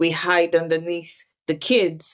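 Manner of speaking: ordinary talk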